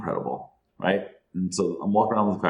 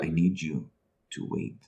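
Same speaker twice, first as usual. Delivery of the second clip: put-on, overly dramatic, theatrical, slow delivery; 3 semitones lower, 6 dB quieter than usual. Retelling what the guide told him, imitating a dramatic way of talking. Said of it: "He was very dramatic in how he talked".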